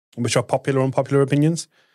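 rapid-fire, very fast delivery. Chiming in during a chat about Reddit's unpopular opinions, said very fast. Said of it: "Said that very fast".

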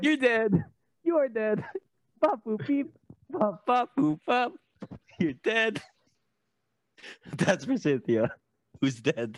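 slam poetry delivery. Performing a slam poem for cynthia, in slam poetry delivery. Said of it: "You can do it poetry style".

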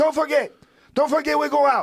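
put-on Cuban Spanish accent, pitched high. Mimicking how Cubans say a phrase, in a Cuban accent. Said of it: "with that accent".

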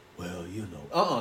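very low, soft, gloomy voice. Speaker mimics a gloomy listener's reply before scolding them, in a gloomy Eeyore voice. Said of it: "Stop talking with the Eeyore voice".

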